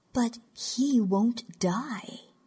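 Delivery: quiet, biting, soft, cutting, very drawn out. Speaking to a mother about him, soft and cutting. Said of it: "Zakhidl's voice was soft and cutting".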